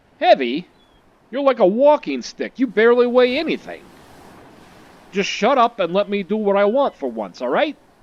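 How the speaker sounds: loud, tough and mean put-on tough-guy voice. Streamer voicing Yoichi, who insists on carrying Keitaro, acting tough and mean. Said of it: "[name] really likes to pretend to be tough and mean on the outside, / He's not a very nice young man. / He's not a very nice young man".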